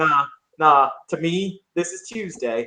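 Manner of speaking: steady, very stable, flat, emotionless delivery. The narrator voices a calm character during a big event, in a very stable, emotionless voice. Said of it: "in a very kind of very stable, very stable voice".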